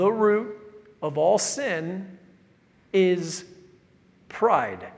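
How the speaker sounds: very slow, halting, word-by-word emphasized delivery. Announcing you will say this very slowly, then a very slow delivery. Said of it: "I'm going to say this very slowly".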